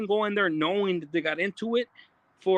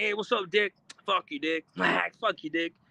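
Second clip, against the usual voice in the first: casual, friendly, playful teasing tone. Retelling how another person said it, not disrespectfully: imitating a casual friendly insult. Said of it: "That's how he said it".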